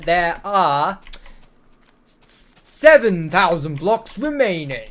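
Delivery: dramatic epic announcer voice, big swooping pitch. Announcing the remaining block count to someone who asked nicely, in an epic announcer voice. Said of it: "I will bring out the epic announcer voice to say that".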